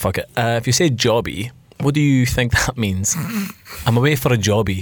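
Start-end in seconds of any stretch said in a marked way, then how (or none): none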